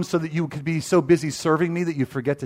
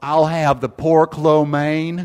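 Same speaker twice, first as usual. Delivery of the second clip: put-on heavy, big, loud, drawn-out Southern accent; 5 dB louder than usual. Retelling a meal out, a prophetic guy orders from the server: big southern drawl. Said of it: "a big southern drawl".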